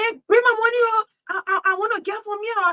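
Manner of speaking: high-pitched, shouting yell. Retelling what a man shouted after arriving at the gate, imitating someone yelling. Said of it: "he started to shout, yelling".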